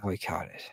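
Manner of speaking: very quiet, barely audible under-the-breath mutter. Retelling a broadcast moment, imitating Trent Green muttering under his breath. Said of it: "he says it under his breath".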